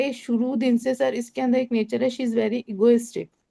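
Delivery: normal talking voice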